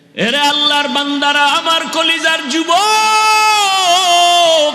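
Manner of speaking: roaring, sermon-style voice projected to a crowd.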